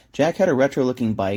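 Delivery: plain reading voice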